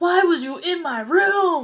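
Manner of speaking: loud, high angry voice. Retelling the scene where Mike comes back out of his room, horrible put-on Mike voice. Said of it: "That was a horrible guy voice".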